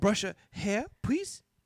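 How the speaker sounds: put-on childlike Japanese accent. Speaker imitates a little girl asking them to do her hair, imitating a child's Japanese-sounding accent. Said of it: "you're a Japanese man now".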